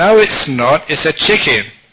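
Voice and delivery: mock loud firm insistence. Retelling a husband arguing with his wife: imitating a raised voice. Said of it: "raising his voice".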